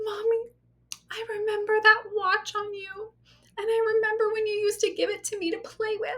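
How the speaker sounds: very high, tearful, crying voice. Retelling what a crying daughter said about a lost watch: imitating daughter crying. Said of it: "She starts crying, and she's like".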